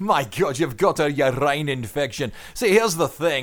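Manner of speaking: put-on Scottish accent, done briefly. Bantering with another person at the start of a show, in a Scottish accent. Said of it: "I'm not going to do that the whole way through the show".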